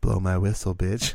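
usual speaking voice

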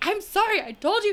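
play-acted, very high-pitched hollered yell. Retelling a man overheard outside yelling at his ex-girlfriend, retelling someone's yell. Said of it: "He's like yelling at her".

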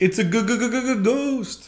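high, scared cartoon dog voice, "ghost" stretched out. Reading a Bible passage aloud, doing the disciples' line in a Scooby-Doo voice. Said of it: "whenever I read it like Scooby-Doo".

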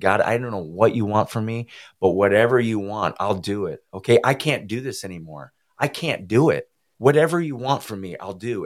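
acted-out screaming. Recounting hitting his knees, the speaker retells screaming to God. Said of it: "I literally hit my knees and I'm screaming".

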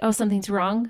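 ordinary talk, nothing marked

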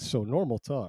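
usual speaking voice

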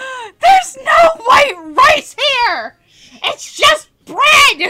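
shrill wail, very loud, high and slow. Retelling the restaurant scene where Hanayo finds no rice: imitating Hanayo screaming.

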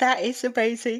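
yawning while speaking. Reacting to a demonstration of a photo editing preset, yawning while speaking. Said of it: "I yawned all of a sudden".

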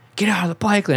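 play-acted, very high screamed voice. Telling how a woman screamed at the speaker in the bike lane: retelling a scream. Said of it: "she just screamed at me like".

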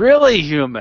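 sneering, contemptuous tone.

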